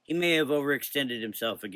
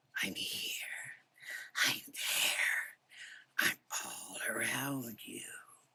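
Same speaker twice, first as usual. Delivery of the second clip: low, hissing, rasping whisper; 8 dB quieter than usual. Narrator reads a voice calling from the cave's darkest pit: low raspy hissing voice. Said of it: "A low, raspy, hissing voice could be heard".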